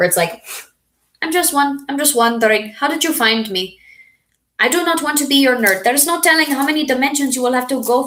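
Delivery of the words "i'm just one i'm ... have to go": high-pitched Indian accent. Sounding like the Phineas and Ferb character, Baljeet Indian accent. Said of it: "I can do like an Indian accent".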